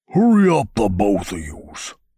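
loud, swooping, rumbling ape voice. Narrator reads an ape creature ordering two others to hurry, rumbling voice. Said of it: "his voice rumbled".

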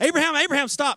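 put-on angel's cry, very high, loud calling shout. Retelling the angel's call to Abraham to stop, angel shouting. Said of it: "the angel shouts as he's".

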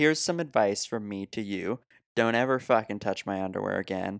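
normal talking voice

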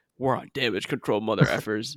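acted, cheesy, corny would-be badass tough-guy delivery. Retelling another's line as the music builds, imitating a corny cool line. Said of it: "he's about to drop this sick line".

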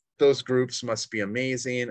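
ordinary delivery

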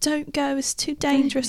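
put-on British accent. Imitating people in the UK warning about snow: imitating a British accent. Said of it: "Pretty good accent".

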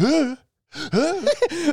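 gasped huhs, way up high. Reenacting a movie scene of someone picking up a snowball: Will Ferrell impression. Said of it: "[name] is doing such a good impression of this".

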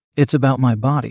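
plain reading voice

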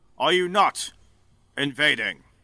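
big, loud, booming voice. A man who seems to be a general approaches the group; loud, booming voice. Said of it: "He goes in a loud, booming voice".

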